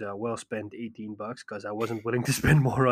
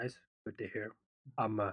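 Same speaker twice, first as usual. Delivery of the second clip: flat, deadpan, sarcastically unenthusiastic delivery; 12 dB quieter than usual. Answering another speaker's news about Nintendo: sarcastically unenthusiastic. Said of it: "by the sound of my voice and the intonation".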